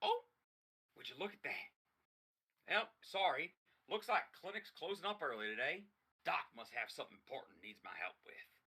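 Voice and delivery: perky, bright, perked-up robot voice. Voicing the robot Doc Smiley as he closes the clinic early: perked-up Doc Smiley voice. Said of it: "Doc Smiley just sort of perks up and goes".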